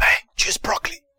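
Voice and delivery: soft, whispered, urging tone.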